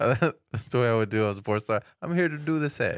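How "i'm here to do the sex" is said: heavy put-on Italian accent, pitched up. Friends joking around, one playing a porn star, Italian accent. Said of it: "that was very Italian".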